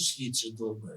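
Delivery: brief, matter-of-fact veteran soldier voice. Retelling what the old-timers in the combat unit told him: imitating the unit's old-timers. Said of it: "старожили ще мені казали таким голосом".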